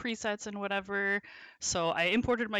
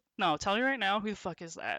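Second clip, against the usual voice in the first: put-on joking, playful tone. Retelling a partner's reaction to a phone alert: imitating a joking demand. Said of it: "obviously he was joking".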